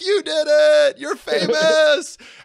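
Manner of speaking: very loud, very high, shrill, drawn-out celebratory scream. Retelling screaming at a woman on TV: imitating own screaming. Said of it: "screaming at the T V".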